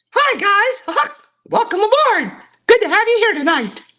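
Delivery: very high-pitched, loud cartoon mouse voice. Greeting the guys tonight on request, in a Mickey Mouse voice. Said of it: "I'll do Mickey Mouse right now".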